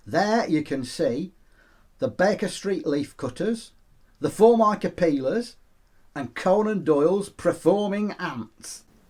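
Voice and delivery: high cartoon talking-animal presenter voice. Greeting the audience as a talking mongoose: Jeff the Talking Mongoose voice. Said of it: "is that a talking mongoose there before my eyes?".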